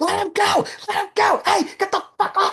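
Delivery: high-pitched yelp. Describing a boxing match, retelling the referee Mills Lane screaming. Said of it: "You hear him screaming".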